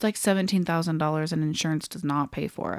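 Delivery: ordinary delivery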